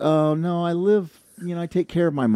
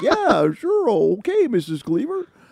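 put-on very high, slow sitcom-style teen voice; 11 semitones higher than usual. Recalling dinner with a girlfriend's parents: Eddie Haskell voice. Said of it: "a very Eddie Haskell type of moment".

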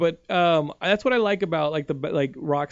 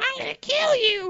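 put-on squeaky character voice, much higher pitched. Describing yelling at drivers who cut them off, in a squeaky Toad voice. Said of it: "like as Toad".

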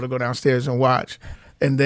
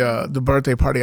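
normal talking voice

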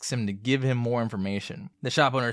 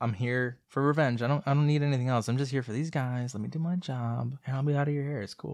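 casual put-on voice; 3 dB quieter than usual. Acting out the Crow's lines about revenge: very casual delivery of the Crow. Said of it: "Yours is very casual".

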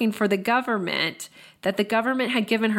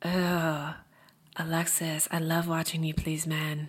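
creepy, leering man's voice, low and hushed; 5 semitones lower, 7 dB quieter than usual. Speaker retelling a man's recorded words to a woman: imitating a creepy voice. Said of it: "you can actually hear his creepy voice".

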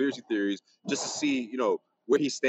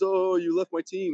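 very slow, high, taunting, mocking little put-on voice; 6 semitones higher than usual. Retelling how a player mocked a reporter at the Garden: imitating a mocking little voice. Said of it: "that little voice where he pretends".

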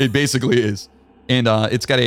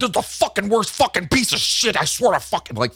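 put-on high, furious, all-out freaking-out ranting outburst; 10 semitones higher than usual. Retelling a friend's rant after a movie: imitating a friend freaking out. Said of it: "freaking out".

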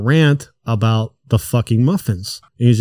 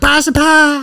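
put-on high-pitched man's voice, much higher, slower. Speaker imitates a guy selling pies as he comes back inside, high-pitched. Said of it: "he does it like in a high-pitched voice".

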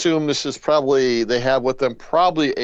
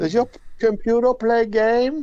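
put-on little kid's voice, much higher; 10 semitones higher than usual. Speaker casts a listener as a typical kid asking questions, little kid's voice. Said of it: "I'm trying to do a little kid's voice".

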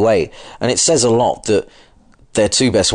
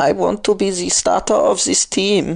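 put-on ridiculous German accent, very high and shrill; 11 semitones higher than usual. Pretending Brock Osweiler is speaking for himself, ridiculous German accent as Brock Osweiler. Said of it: "Why have you done a ridiculous German accent?".

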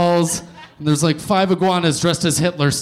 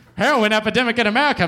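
put-on 1940s old-time radio announcer voice, much higher; 4 semitones higher than usual. Speaker repeats a news phrase, imitating a 1940s radio announcer. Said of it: "I don't know why I said that like a 1940s radio caster".

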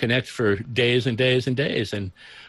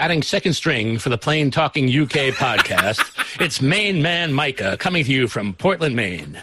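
polished, smooth broadcast radio announcer voice. Introducing a guest on the podcast, in a radio announcer voice. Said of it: "That's the best radio voice I think I've heard".

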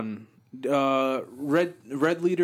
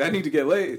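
ordinary delivery

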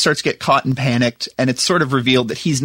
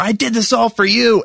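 mock high-pitched outburst, screamed at the top of the lungs; 8 semitones higher than usual. Recapping a movie, acting out a man yelling at a woman: retelling a yell. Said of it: "he's yelling at her".

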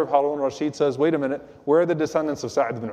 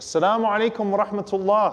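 mock, slightly raised, pitched-up, elevated voice. Retelling a story about a greeting being repeated, mimicking someone saying it in a slightly raised voice. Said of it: "in a very low voice".

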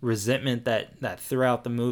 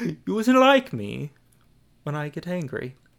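rough, bad Cockney accent, pitched up; 6 semitones higher, 4 dB louder than usual. Two speakers compete at worst accent; one does a bad Michael Caine impression. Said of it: "What the fuck was that?".

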